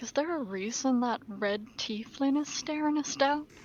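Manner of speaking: muttering under the breath. Roleplaying game player voicing a character to their group: quiet mutter. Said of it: "just quietly mutter".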